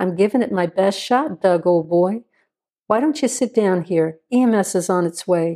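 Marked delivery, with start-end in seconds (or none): none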